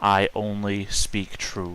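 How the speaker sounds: low, unprojected, kept-down voice. In a role-play scene, speaking so those behind can't hear, in a low voice, not projecting. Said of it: "say in a low voice as to not project".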